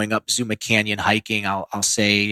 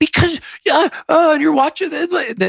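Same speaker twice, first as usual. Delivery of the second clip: mock raised-voice yelling, much higher pitch; 4 dB louder than usual. Retelling answering her when she asks why you're yelling, retelling own raised voice. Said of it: "why are you raising your voice?".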